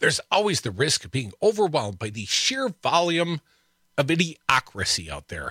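normal talking voice

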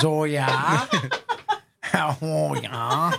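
put-on very slow, stretched, drawn-out sing-song Wisconsin accent. Imitating a woman's reply after a joke, in her Wisconsin accent. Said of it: "with her Wisconsin accent, she says".

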